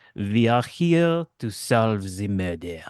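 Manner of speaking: put-on French accent, coy. A character approaches the guards, coy French accent like Hercule Poirot. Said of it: "in a coy French accent".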